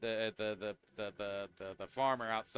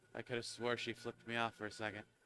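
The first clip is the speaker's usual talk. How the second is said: quieter mumbled aside, muttered under the breath; 8 dB quieter than usual. Voicing a character after she heads off: muttering under his breath. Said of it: "He kinda says under his breath".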